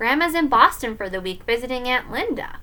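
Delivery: ordinary delivery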